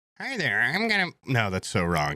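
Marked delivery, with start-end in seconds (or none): 0.2-1.1 bad, odd, high put-on puppet-like voice. Try to show how a guy on TikTok talks and get it wrong, in a bad, odd Kermit-like voice. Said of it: "He kind of sounds like Kermit".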